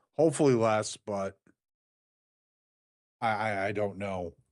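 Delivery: voice full of failure. In conversation with another speaker, the speaker trails off, sounding defeated. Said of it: "such a goddamn like sense of just failure in your voice".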